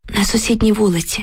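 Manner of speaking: ordinary delivery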